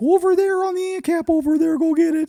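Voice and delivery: very high, exaggerated cartoonish kid voice. Retelling how a woman with a weird accent talks: Carl from Jimmy Neutron voice. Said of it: "you talk like Carl from Jimmy Neutron".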